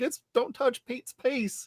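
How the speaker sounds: playful, mild, held-back mock yell. Retelling what they kept saying on seeing an actor again: imitating own past screaming. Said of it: "kept screaming".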